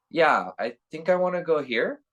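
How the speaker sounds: upward pitch at the end, on here. Speaker demonstrating how people seeking rapport sound uncertain; rising uptalk inflection. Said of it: "that up inflection where everything they're expressing".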